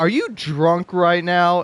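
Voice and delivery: play-acted, pointed, accusing, challenging tone. Imitating someone asking if you're drunk: imitating an accusatory tone. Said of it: "in that, like, accusatory ter-, tone of voice".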